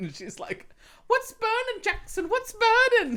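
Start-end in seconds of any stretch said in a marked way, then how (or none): 1.1-3.2 put-on very high, loud British accent. Retelling what the stepmom said as she came in, British accent. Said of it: "she has that like British accent".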